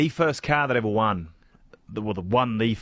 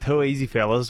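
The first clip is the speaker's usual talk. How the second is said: plain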